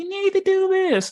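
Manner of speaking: very high, squeaky little voice. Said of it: "a little voice like".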